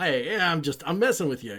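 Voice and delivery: mock goofy joker voice. Describing a show character who switches into goofball mode; mock goofball tone. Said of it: "that kind of goofball".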